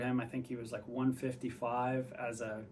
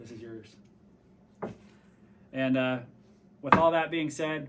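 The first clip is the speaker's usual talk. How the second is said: a little emotional, choked up, voice raised; 8 dB louder than usual. Handing a teammate an award and thanking him: getting a little emotional. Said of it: "I'm getting a little bit emotional".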